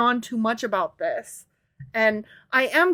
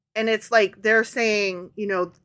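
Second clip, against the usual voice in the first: ordinary talk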